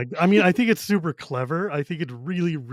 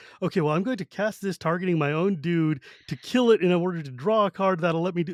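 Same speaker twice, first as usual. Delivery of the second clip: ordinary talk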